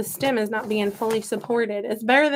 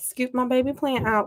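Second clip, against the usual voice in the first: playful, mock Southern accent; 2 semitones higher than usual. Potting a baby plant with a little scooper, in a put-on southern accent. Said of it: "Why am I using a southern accent?".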